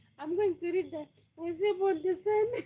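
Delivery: speaking through laughter.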